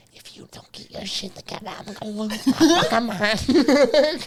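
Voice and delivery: high-pitched, slow, drawn-out stage whisper. Retelling a sergeant threatening young recruits while higher ups are around: imitating a whispered threat. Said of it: "whispering as quiet as he can".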